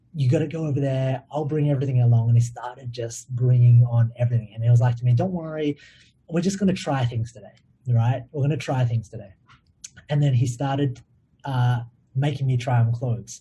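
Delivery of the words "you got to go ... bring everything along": usual speaking voice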